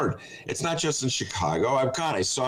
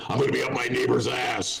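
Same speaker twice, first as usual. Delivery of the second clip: put-on ranting radio host voice. Doing the neighbor line in the same impression: Alex Jones impression. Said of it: "The neighbor thing".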